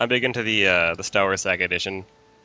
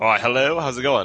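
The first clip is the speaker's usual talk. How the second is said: slow, high, drawn-out put-on British accent; 5 semitones higher than usual. Greeting the hosts on joining the call: put-on British accent. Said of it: "gonna drop the British accent right now".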